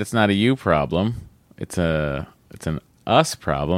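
ordinary talk, nothing marked

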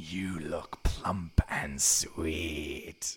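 very low, deep, hushed growling wolf voice. Game master voices a creature in the brush speaking to a player: deep growling voice. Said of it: "You hear a deep growling voice".

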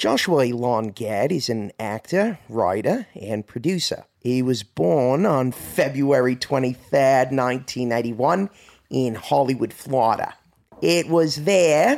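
put-on Australian accent. Asked to read in different accents, the speaker starts on Australian, Australian accent. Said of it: "we'll start off with Australian".

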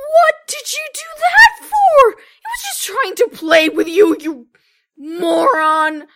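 furious, very loud, high yell with moron stretched. Game narrator voices people from the Whitfield tunnels yelling angrily at the player. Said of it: "start yelling at you like".

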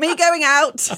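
put-on, very high, blurted reflexive shout. Telling of a habit when leaving places, reenacting a reflexive shout. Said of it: "I still fairly frequently reflexively shout".

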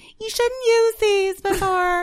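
very high, grating, nagging mom voice. Retelling a mom's warning about tampons, imitating mom in a grating, naggy voice. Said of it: "grating, like, naggy voice".

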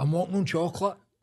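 put-on, high-pitched shout. Recalling walking up Union Street after being spiked, retelling a shout. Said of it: "I was shouting".

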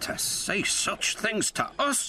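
high-pitched, drawn-out, indignant, outraged outcry. A narrator reads two engines' reply at an indignation meeting, cried out indignantly. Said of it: "cried Donald and Douglas".

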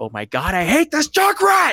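mock top-of-lungs scream, very high and swinging. Recalling a clip of himself after being killed repeatedly in a match, retelling a scream. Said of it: "screaming at the top of my lungs".

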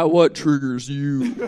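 put-on very deep voice. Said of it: "the deepest voice".

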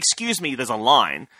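put-on annoyed, irritated voice. Retelling a robbery, voicing the waiting customer: imitating an annoyed customer. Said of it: "was annoyed that he'd pushed in to rob me".

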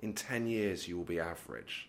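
put-on mournful, very low-pitched, quiet, sad delivery. Recounting what a man told them while they were on stage: retelling a sad remark. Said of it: "kind of sadly".

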